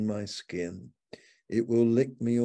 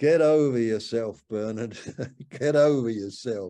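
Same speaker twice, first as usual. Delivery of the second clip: real put-on strong Australian accent; 3 dB louder than usual. Retelling a friend's rebuke during a cramped trip: imitating an australian accent. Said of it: "in his real Australian accent".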